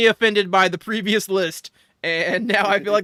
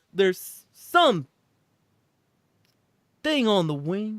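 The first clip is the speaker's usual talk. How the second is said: halting, stop-start phrasing with pauses in odd places. Showing someone how the wing line sounds as a Christopher Walken impression. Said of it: "You do Christopher Walken".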